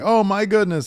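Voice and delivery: high, loud, sarcastic mock gasp.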